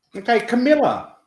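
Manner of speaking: loud, high-pitched yelling. Speaker calling out to camilla while asking questions with rods, yelling. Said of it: "I don't know why I'm yelling".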